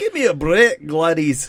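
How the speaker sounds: put-on Scottish accent, loud and swooping. Showing how the name Gladys sounds if you were Scottish, Scottish accent. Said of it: "if you were Scottish".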